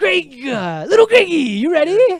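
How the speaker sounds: very high, loud, swooping host voice. Opening a quiz round for Greg: Regis Philbin impression. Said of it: "you were real close".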